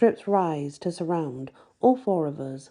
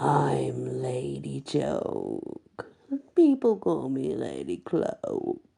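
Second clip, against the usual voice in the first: deep, rough, creaky rasp, very slow; 3 semitones lower than usual. Reading a story aloud, a scary lady introducing herself: deep and rasping voice. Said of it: "she says in a deep and rasping voice".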